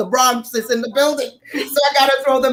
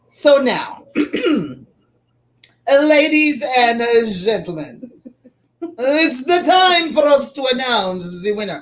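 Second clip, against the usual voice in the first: very slow, drawn-out, put-on posh announcer voice. The host tells the ladies and gentlemen it's time to announce the winner, fake fancy voice. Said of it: "I'm trying to sound like one of those kind of fancy people".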